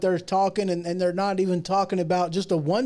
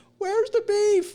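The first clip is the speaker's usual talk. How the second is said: very high-pitched, put-on little old lady voice. Passing on what Linda put in, deliver it in a little old lady voice. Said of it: "Linda put in her little old lady voice".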